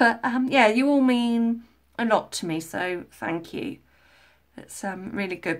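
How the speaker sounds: emotional, slightly choked-up voice. Speaker thanks new subscribers for joining, getting a bit choked up. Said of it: "I'm getting a bit choked up".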